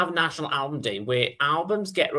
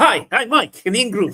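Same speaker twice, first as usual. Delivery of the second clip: mock, very loud, eager, excited high voice; 8 semitones higher, 8 dB louder than usual. Speaker describing how Mike opens his videos, imitating Mike's excited greeting. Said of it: "he starts off really excited".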